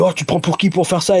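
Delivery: acted heated, confrontational tone. Retelling a clash, the speaker quotes the head coach: retelling a raised voice. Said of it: "il commence à lever le ton".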